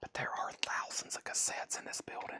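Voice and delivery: playful whisper. Speaker in a building full of cassettes, trying not to wake the neighbors: joking whisper. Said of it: "We gotta whisper so we don't wake up the neighbors".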